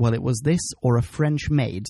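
ordinary delivery

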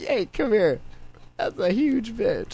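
put-on old person voice. Joking about how old people talk: imitating an old person. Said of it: "old people don't give a fuck, dude. They'll just be like".

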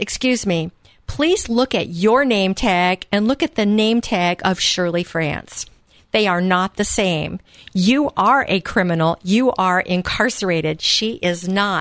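plain

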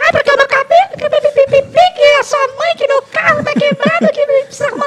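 high-pitched put-on woman's voice. Asked by another speaker to imitate the woman again: imitating a woman's voice. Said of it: "imita a mulher de novo".

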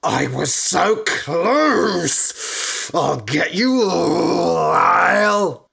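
drawn-out, very slow, rasping, rough, rising roar. Candida, fallen back into the lake of blood, roars at Lyle. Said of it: "Roared Candida".

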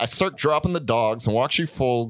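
usual speaking voice

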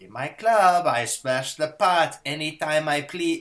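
bad, phony Russian accent, loud and slow. Retelling a story from set, imitating John Malkovich's bad Russian accent. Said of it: "shows up in his bullshit Russian accent".

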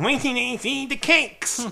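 high, loud, squeaky, sneaky weaselly little voice. Podcaster recounting a villain sneaking in as a palace cook, in Skeletor's little weaselly voice. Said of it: "It was like a little Weasley thing".

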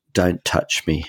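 normal talking voice

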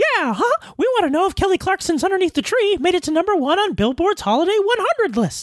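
very high cartoon-mouse sound-alike voice. Show host voicing an imaginary listener's question, in a Mickey Mouse sound-alike voice. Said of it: "Hey, imaginary listener, sounds kind of like [name], but for copyright and trademark reasons, is definitely not [name]".

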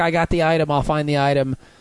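plain

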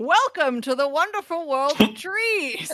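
loud bellowing, high pitch. Running a heist game, voicing a voice that greets players at a staircase, bellowing. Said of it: "a voice bellows out".

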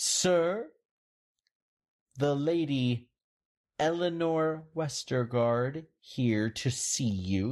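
words through clenched teeth. Narrator voices a servant announcing lady Eleanor Westergaard at the door, through clenched teeth. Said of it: "she says through clenched teeth".

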